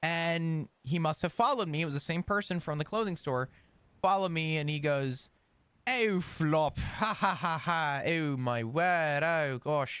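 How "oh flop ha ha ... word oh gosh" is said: put-on very posh, stern, very slow accent. Retelling a man who followed the speaker from a clothing store; imitating a posh, stern accent. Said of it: "with his very posh, very stern accent".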